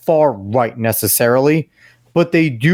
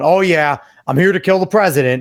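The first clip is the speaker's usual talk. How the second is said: heavy sarcasm laid on, mocking tone; 4 semitones higher than usual. Imagining what he says while being patted down: mock-sarcastic retelling. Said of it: "sarcastically, he's probably going".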